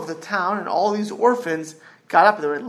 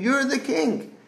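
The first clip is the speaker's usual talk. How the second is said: mock crying in a high, tearful voice; 6 semitones higher, 4 dB quieter than usual. Retelling how a boy begged the king for his parents: retelling a crying plea. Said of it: "he's crying to the king".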